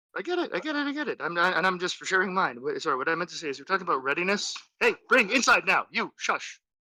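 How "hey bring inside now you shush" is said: loud, high-pitched scolding yell. Speaker breaks off mid-discussion to start shouting at their dog. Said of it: "Sorry about the sorry about the shouting".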